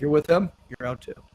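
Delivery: normal talking voice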